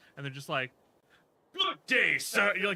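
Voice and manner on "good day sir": put-on high, loud, old-world fantasy olde English voice. Imitating someone who always talks in D&D character: imitating old English D&D character speech. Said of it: "or was he doing the old English shit?".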